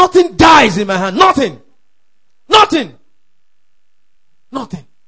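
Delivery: high, loud, aggressive shout. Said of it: "make that declaration aggressively".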